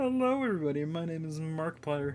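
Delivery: put-on cartoon puppet frog voice. Talking about loving analog horror, doing a greeting in a Kermit voice. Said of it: "I tried doing that in a Kermit voice".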